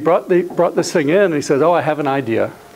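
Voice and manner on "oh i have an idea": put-on strong German accent. Recalling a man who brought in an idea, quoting him in a strong German accent. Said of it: "he had a very strong German accent".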